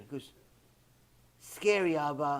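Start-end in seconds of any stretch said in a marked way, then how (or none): 1.4-2.4 put-on mimicked three-year-old voice, lower and quieter. Retelling what a little daughter said: imitating a little daughter. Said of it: "my little daughter".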